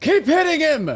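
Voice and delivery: shouting from overhead. Voicing a character caught in the air: yelling from above. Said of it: "you just hear me yelling from above".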